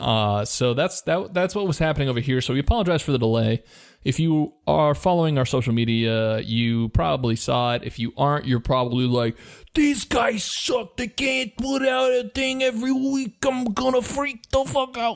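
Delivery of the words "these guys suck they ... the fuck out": very high-pitched put-on gabagool voice. Imitating an annoyed listener complaining about delays: put-on gabagool voice. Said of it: "we're using a voice with the gabagool".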